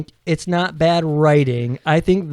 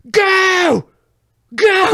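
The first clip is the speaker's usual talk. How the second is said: imitated scream, much higher, louder; 4 dB louder than usual. Retelling a scene, the speaker quotes a man sitting on the ground, imitating a scream. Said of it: "And he's like screaming".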